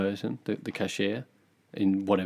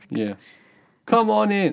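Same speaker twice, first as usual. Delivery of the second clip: very high, loud, put-on Brooklyn New York accent; 12 semitones higher, 6 dB louder than usual. Redoing a man's greeting when asked to do it in a New York accent. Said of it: "how'd you do that in new york accent".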